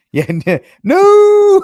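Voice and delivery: very high, loud, drawn-out anguished mock wail.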